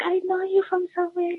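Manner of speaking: timid, soft, very high little voice. Retelling what a shy young woman who watched his videos said, imitating a soft, shy voice. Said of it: "So in a soft voice".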